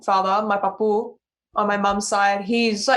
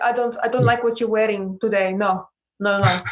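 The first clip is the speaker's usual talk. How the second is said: heavy put-on Greek accent, scolding tone. Retelling what the speaker's Greek grandfather says, imitating thick Greek accent. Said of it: "he has a really thick Greek accent".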